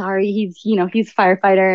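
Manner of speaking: ordinary talk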